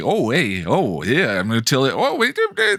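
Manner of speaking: jokey, goofing-around, swooping banter delivery. Imitating how the characters now talk: imitating a jokey delivery.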